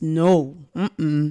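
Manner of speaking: ordinary talk, nothing marked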